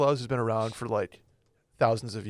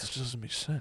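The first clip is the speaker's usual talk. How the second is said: put-on old-man voice, much quieter; 10 dB quieter than usual. Describing Will puzzling over the Easter Bunny, imitating Will's old-man voice. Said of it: "his old man voice".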